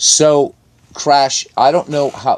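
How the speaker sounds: loud, high-pitched calling out.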